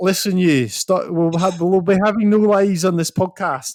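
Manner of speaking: loud, high, terrible fake Scottish accent. Podcast host talking with a co-host, in a terrible scottish accent. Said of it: "that was a terrible Scottish accent".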